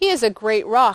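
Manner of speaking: ordinary delivery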